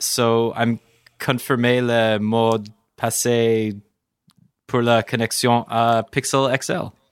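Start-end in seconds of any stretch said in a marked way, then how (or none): 1.2-6.9 bad, terrible, mangled French pronunciation. Reading his watch's French setup text aloud, in a terrible French accent. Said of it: "That's a terrible French accent".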